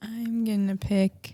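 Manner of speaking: plain half-whisper under the breath. Choosing three during a recorded conversation, half-whispering. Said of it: "why are you whispering?".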